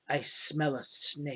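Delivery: slow, grinding, grating stone-on-stone whisper. Game master voicing a stone wolf speaking to a player, grating stone-on-stone voice. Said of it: "in this grating stone on stone voice".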